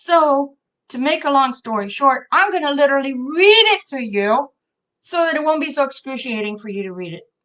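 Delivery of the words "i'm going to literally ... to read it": sarcastic in a loving, affectionate, teasing way. Talking to people watching the filming: lovingly sarcastic. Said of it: "I'm being sarcastic in a loving way".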